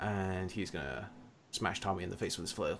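normal talking voice

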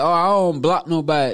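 ordinary talk

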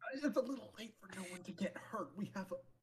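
hushed, half-whispered aside. Half-whispering to the party so the people at the door cannot hear: half-whispering to the party. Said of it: "this is me whispering to y'all".

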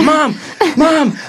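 very high, loud, thrilled and excited yell.

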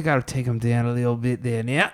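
faked, offhand, put-on Australian accent. Asked to do an Australian one, recalling wrestling with Charlie: Australian accent. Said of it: "You can do an Australian one though".

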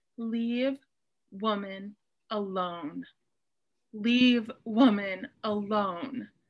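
acted, slow, firm and unbending delivery. Retelling a scholar's words from a video: imitating a firm statement. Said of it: "very firmly".

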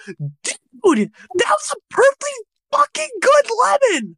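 very high, shrill, swooping screech. Retelling how Jack reacted after his lemon got slapped away: imitating Jack's high-pitched screech. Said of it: "all you hear is high-pitched screech".

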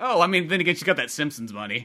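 usual speaking voice

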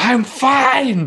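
put-on very high shrill scream, "fine" stretched out. Describing a show scene where he hosts Rachel's new date, retelling a scream. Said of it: "and just screams".

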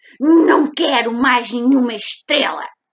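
grumpy bear voice, grumbling, very loud and high. Narrator reads the grumpy bear's reply to the little rabbit, grumbling. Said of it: "resmungou o urso resmungão".

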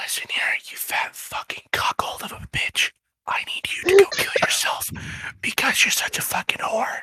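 aggressive, violent whisper, close on the mic. Told to go, insulting the listener into the mic: violent whisper. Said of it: "violently whisper into their mic".

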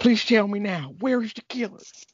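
put-on country accent, clenched teeth. Imitating the woman speaking to the doctor, put-on country accent through teeth. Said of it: "she had a country accent, but she kept talking through her teeth".

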